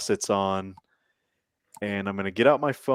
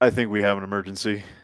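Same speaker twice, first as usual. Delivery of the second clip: normal talking voice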